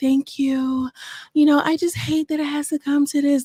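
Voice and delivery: put-on devout, solemn voice. Retelling a livestream, the speaker does Blac Chyna's God-fearing voice. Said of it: "in her new God fearing voice".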